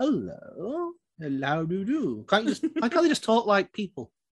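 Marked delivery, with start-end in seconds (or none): 0.0-2.2 put-on arch voice, quieter and slower. Mocking how genies and vampires talk, put-on arch voice. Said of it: "you have to talk like this".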